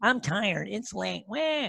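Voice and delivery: slow, whiny, complaining voice. Acting out excuses for skipping exercise, whiny, complaining voice. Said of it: "I use the whiny voice".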